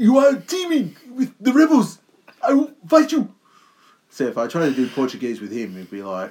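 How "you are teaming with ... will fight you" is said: loud, very high, belted wrestler voice. Showing how the wrestler talks: imitating Saul Guerrero. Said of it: "I've been doing Saul Guerrero's".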